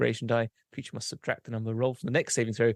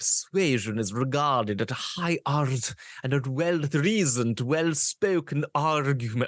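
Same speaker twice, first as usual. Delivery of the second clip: slow speech with every R rolled; 2 semitones higher than usual. Reading a passage aloud to a listener, in a Dracula voice, rolling the R's. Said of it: "I'm trying to do the R's".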